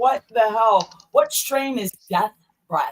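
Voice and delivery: ordinary talk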